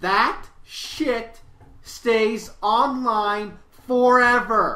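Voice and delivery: very slow, loud, deliberate, word by word. Warning people about the internet, very slow and deliberate. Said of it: "I'm going to say this very slowly and very specifically".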